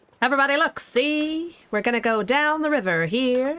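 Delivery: high posh transatlantic accent, drawn-out "see". Streamer talking to the chat, Katharine Hepburn voice. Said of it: "five minutes of me doing what sounds like".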